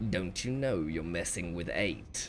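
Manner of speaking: very low, quiet mutter. In a tabletop game, an opponent speaks to the player mid-fight; muttering. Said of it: "he mutters to you".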